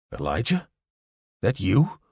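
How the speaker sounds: astonished, stunned disbelief, swooping voice. Reading a story where a guard recognizes Elijah: astonished voice. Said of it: "in an astonished voice".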